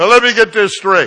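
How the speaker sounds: booming very loud voice. Retelling what they said to a man across the aisle, said real loud. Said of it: "I said it real loud".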